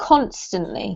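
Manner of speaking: constantly, stressed on first syllable con-. Going over a couple of words with Carlos: stress on CON in constantly. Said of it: "This one here has the emphasis on the first syllable".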